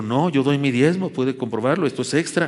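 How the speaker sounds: ordinary talk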